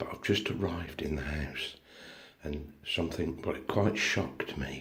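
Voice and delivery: very hushed tone. Having just arrived in the house, the speaker talks in a very hushed tone. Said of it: "I'm talking in a very hushed tone".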